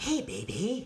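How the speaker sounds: sexy, seductive come-on voice. Asked by the other speaker to do a sexy voice, sexy voice. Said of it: "You got a sexy voice?".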